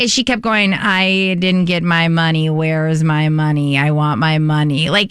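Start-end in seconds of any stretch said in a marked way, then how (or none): 0.7-4.9 low, slow, flat monotone drone. Retelling a talk show guest's repeated complaint: Gabby Windey monotone voice. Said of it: "in very Gabby monotone way".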